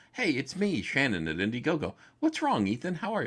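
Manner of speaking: put-on clueless, innocent voice, playing dumb. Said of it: "they dummy up real quick".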